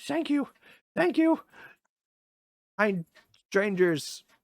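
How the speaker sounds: out of breath, panting. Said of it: "he's, like, huffing and puffing".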